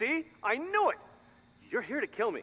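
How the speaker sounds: frantic alarm, very high and agitated, panicked. A character accuses the people in the room of coming to kill them, agitated. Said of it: "just calm down".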